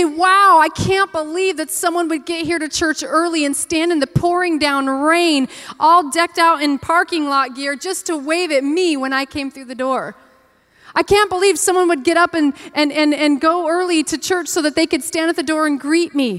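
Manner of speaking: high, loud, amazed, grateful gushing.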